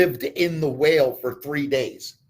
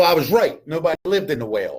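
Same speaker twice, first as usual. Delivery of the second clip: normal talking voice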